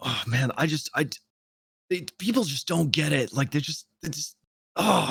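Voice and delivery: mock fed-up, furious, exasperated, words breaking off. Retelling a man complaining to the other guys: imitating someone furiously upset. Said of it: "he's so upset, like furiously upset".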